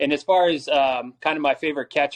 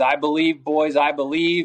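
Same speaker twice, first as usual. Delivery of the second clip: ordinary delivery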